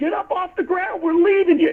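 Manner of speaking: acted, high, urgent, screamed yell. Retelling a moment on the trail, the speaker screams at the kid: retelling a scream. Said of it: "And I'm screaming at the kid".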